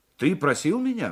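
plain

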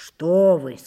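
contemptuous. Asked a doubtful question by the daughter, the narrator replies with contempt. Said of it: "сказал я с презрением".

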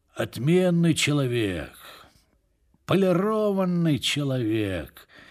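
raspy voice, words mumbled indistinctly. The woken major mutters while trying to sleep again, hoarse mutter. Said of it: "хрипло пробормотал майор".

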